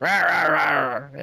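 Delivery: put-on gruff, rough, old-sounding voice, drawn-out rah. Podcaster repeats a character's earlier growl when asked, imitating a gruff old voice. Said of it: "much less gruff and old sounding".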